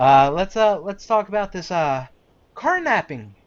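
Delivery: patronizing, talking-down tone. Voicing a police officer speaking to a player: condescending cop. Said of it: "he kinda says a little condescendingly to you".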